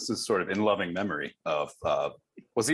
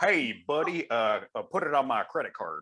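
imitated American accent; 3 semitones higher than usual. Showing the guests how they imitate americans: american accent impression. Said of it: "you guys do like American impressions".

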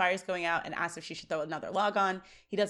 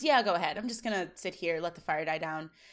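ordinary talk, nothing marked

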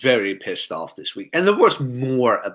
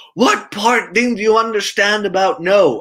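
very high, shrill, loud yell; 9 semitones higher, 5 dB louder than usual. Recounting a classroom story, acting the teacher across the room: retelling a teacher's yell. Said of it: "the teacher yells".

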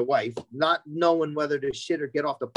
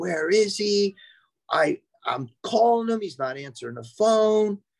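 play-acted, high-pitched screaming; 6 semitones higher, 3 dB louder than usual. Retelling how the wife screamed at a buddy, asking where he was: imitating someone screaming. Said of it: "she's screaming at him".

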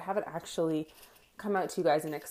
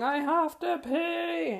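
mock very high, very slow, long drawn-out yell; 10 semitones higher than usual. Retelling how she screamed from the back of the bike, retelling her scream. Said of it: "while she is in the back screaming".

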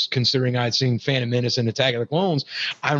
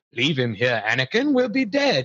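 switched into a different voice with swooping pitch; 2 semitones higher than usual. Retelling a film scene, quoting Palpatine: Palpatine's changed voice. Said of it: "conveniently now changing his voice".

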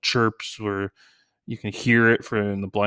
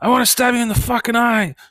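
put-on very high, shrill, loud child yell; 14 semitones higher, 5 dB louder than usual. A father retells his annoyed son's outburst at him, retelling his son's yell. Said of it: "then he yells out".

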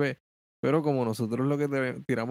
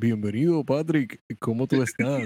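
put-on pompous 80s radio announcer voice. Recalling how the duo first sounded, greeting the other host in pompous 80s radio voice. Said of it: "Con la voz así engolada, parecíamos Radio de los 80".

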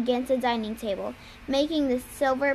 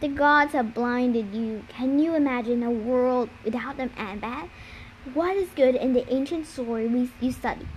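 plain reading voice

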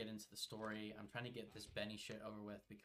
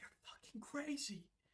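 high-pitched, slow, furious voice. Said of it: "he will get so mad at you".

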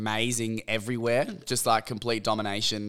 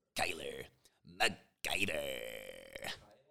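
put-on American accent, one word drawn out; 9 semitones lower, 14 dB quieter than usual. Saying a fighter's name the way Americans would: American accent. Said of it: "say him in the American accent".

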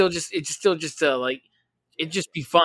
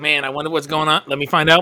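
plain

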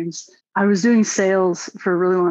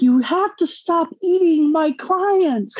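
very high-pitched screaming; 10 semitones higher than usual. Retelling a dream, screaming at bad guys who eat their clients: retelling a scream. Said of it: "and I'm screaming at them".

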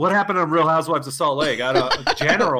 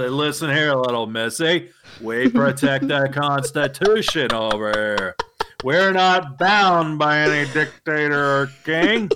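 slow, calm, unhurried, cool and collected lecture. Showing how a cool, calm general should sound: John Wayne type voice. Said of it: "I want the John Wayne type".

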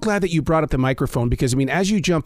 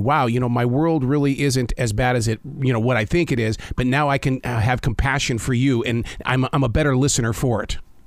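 ordinary talk, nothing marked

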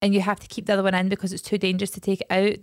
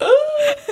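high, loud, laugh-crying squeal. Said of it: "I was like".

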